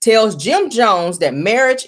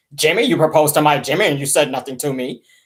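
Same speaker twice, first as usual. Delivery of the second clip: heavy, deep, hard-edged voice; 4 semitones lower than usual. Quoting his mother, imitating a hard, deep voice. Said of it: "that's how she sound".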